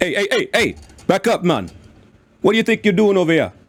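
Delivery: put-on unusual dwarf accent with a faint Jamaican sound. The speaker voices a dwarf character confronting a man at his work: Chiron's dwarf accent. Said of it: "does he have a Jamaican accent".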